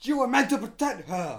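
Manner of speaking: high, reproachful scream at full volume. Quoting a film line: Obi-Wan screaming. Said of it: "Obi-Wan, like, screaming over his life".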